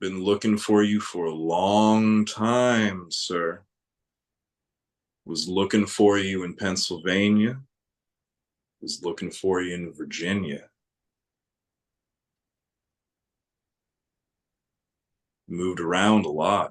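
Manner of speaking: unnaturally deep low voice. Telling a story, voicing the small boy: voice too deep and low for a child. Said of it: "a voice that's too deep and low for any child".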